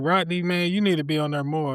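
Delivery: ordinary delivery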